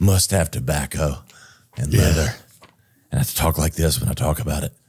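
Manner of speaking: gruff, growling put-on voice. Brainstorming a studio scent, the speaker talks about it in a growly voice. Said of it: "The growly voice".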